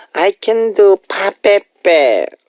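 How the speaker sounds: high, slow, cutesy aegyo. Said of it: "It's like aegyo".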